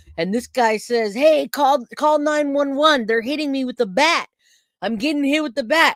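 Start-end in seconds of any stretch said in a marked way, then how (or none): 1.1-6.0 put-on high, urgent yelling in a man's voice. Retelling a man calling out while being attacked, imitating him yelling for help. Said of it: "he yells to me".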